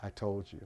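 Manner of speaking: barely audible, very quiet whisper. Retelling a friend's video message, imitating a whisper. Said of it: "he just says in a whisper".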